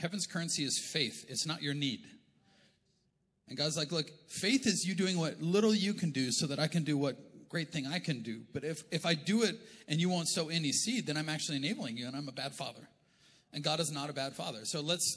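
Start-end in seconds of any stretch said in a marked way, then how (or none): none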